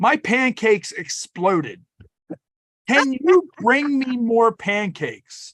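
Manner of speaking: put-on earnest, straight tone. Retelling how he asked the lady for more pancakes: imitating a super serious tone. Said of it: "super serious".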